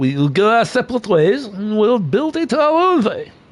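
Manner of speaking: put-on French accent drifting German. Imitating the Peugeot team's choice of a tiny wing: bad French accent. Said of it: "I can't do a French accent".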